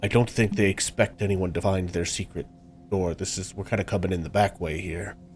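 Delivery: deep, low character voice. Voicing Jerry as he reports on the guards: deep voice for Jerry. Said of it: "He sounds like a deep voice".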